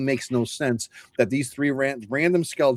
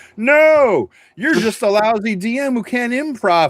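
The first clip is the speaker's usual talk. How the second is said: very high, shrill, raised, screeching scream; 10 semitones higher, 6 dB louder than usual. Imagining old-school purists yelling at the speakers, imitating them screaming. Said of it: "and they're screaming".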